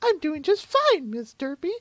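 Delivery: squeaky, very high little talking-muffin voice. Playing derpy voicing a muffin that answers back: talking muffin voice. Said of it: "that's the muffin speaking".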